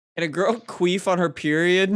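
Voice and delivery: ordinary talk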